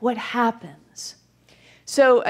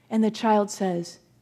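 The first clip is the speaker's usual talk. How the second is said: ordinary talk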